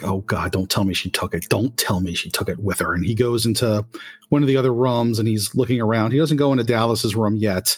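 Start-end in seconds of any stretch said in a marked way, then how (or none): 0.0-2.9 frantic muttering under breath, lower pitch. Narrating a man searching through boxes, voicing him: muttering frantically under breath. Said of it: "he keeps muttering under his breath".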